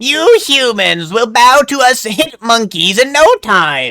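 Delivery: villain voice, pitched very high. Gamer voicing a character while playing, in an attempted Frieza voice. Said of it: "That was not Frieza voice".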